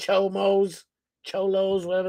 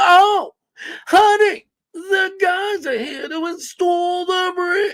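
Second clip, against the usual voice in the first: very slow, pitched-up drawl, every word stretched; 10 semitones higher, 4 dB louder than usual. Explaining that nobody talks like that, the speaker does a Stephen A. impression. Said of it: "I can do the impression".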